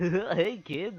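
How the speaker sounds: very high, sinister, creepy clown voice. Showing co-hosts the voice used as the clown last episode: the clown's voice. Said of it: "I did that voice in uh, the last episode as the clown".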